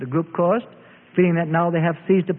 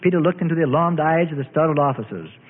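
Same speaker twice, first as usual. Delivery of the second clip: ordinary delivery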